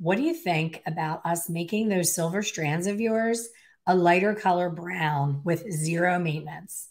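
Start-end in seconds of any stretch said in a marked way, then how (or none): none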